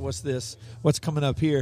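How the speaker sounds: normal talking voice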